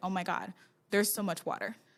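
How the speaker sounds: put-on panicked voice. Retelling what the chief engineer said on the sinking ship: imitating a panicked engineer. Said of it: "you hear the panic in his voice".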